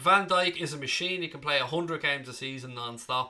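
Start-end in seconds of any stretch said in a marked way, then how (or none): none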